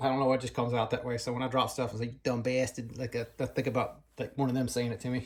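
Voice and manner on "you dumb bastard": put-on Boston accent, quieter. Cursing himself after dropping something, imagining family saying it, in a boston accent. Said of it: "it's usually in a Boston accent".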